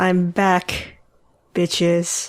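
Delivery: deadpan, zero-inflection flat monotone delivery. A guest who has just been introduced greets everyone, monotone. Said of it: "the most monotone "I'm back, bitches" I've ever heard".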